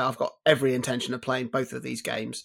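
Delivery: plain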